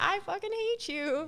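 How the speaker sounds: very high-pitched, sugary tone, angry yet cheery. Retelling what they say to bad drivers: imitating own mad cursing said with a smile. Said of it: "I will be mad, but I say it with a smile".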